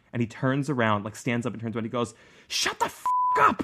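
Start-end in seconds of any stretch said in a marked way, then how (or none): 2.4-3.6 mock very high, enraged, drawn-out furious shriek. Retelling how a bus driver turned and yelled at the kids: imitating an angry yell. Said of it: "He was so mad".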